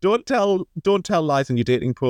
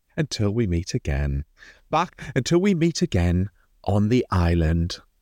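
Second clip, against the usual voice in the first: low advert voiceover delivery; 4 semitones lower than usual. Signing off with a favourite bit, in a Marks and Spencer voice. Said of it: "You're proper Marks and Spencer's voice on".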